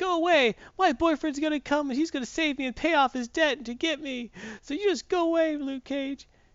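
put-on very high, shrill yelling. Retelling a comic scene where a tied-up hostage orders someone away: imitating someone yelling. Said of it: "and she's yelling".

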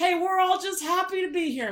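put-on relentlessly chipper announcer. Imitating a radio guy calling a penalty: imitating a relentlessly chipper radio announcer. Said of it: "he's just always just like".

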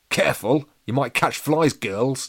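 teasing, said through a chuckle. Chomper teases the open-mouthed girls, chuckling. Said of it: "chuckled Chomper".

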